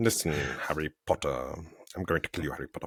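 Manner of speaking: very low, quick voice as if mouth full of soup. Doing a taught impression of Alan Rickman: Alan Rickman impression. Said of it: "someone taught me how to do that impression".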